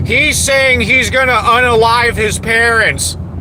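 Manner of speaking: high-pitched, mocking voice.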